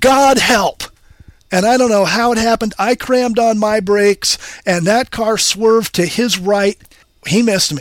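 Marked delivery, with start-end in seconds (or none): 0.0-0.8 sudden, cried-out scream. Retelling a near collision at an intersection; reenacting the scream. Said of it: "I just screamed out".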